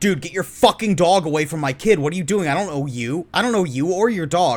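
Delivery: mock freak-out, put-on panicked voice. Picturing a father whose child a stranger's dog sniffs, imitating a father freaking out. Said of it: "freaked out and was like".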